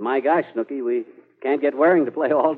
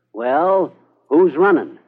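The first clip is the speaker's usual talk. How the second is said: put-on calm, cool, collected, raised voice; 2 semitones higher, 6 dB louder than usual. Retelling an answer to a guy's question about the president: retelling a cool, collected reply. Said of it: "kind of cool and collected".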